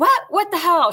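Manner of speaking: screamed, shrieking, high-pitched outburst. Retelling an officer's reaction to swapping keys: imitating someone screaming. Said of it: "She's screaming at me now".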